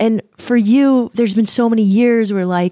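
high, choked-up voice catching with emotion. Speaker talking to someone about their father: choked up. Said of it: "I'm going to get choked up".

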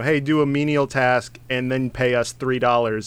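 ordinary talk

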